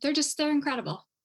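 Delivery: slightly choked up, a little emotional, pitched high. Talking about own children and getting a little emotional. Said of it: "I get a little emotional".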